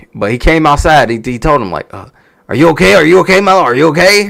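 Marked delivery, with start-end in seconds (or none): 2.5-4.3 loud, raspy, rough, high-pitched screaming. Retelling how the ref checked on a hurt wrestler: imitating someone screaming. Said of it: "he just screaming at him".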